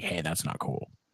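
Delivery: low, soft, understated mock grumbling. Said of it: "Deshaun Watson was like".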